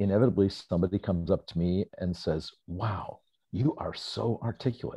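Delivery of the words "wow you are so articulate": mock taken-aback tone of praise. A presenter acting out someone who approaches after a talk, imitating a surprised compliment. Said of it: "in a surprised voice".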